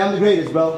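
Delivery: ordinary talk, nothing marked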